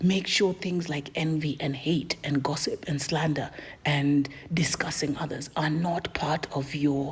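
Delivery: weird, voiceless whispery voice. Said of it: "why does she do the weird whispery voice".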